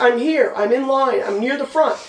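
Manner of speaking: usual speaking voice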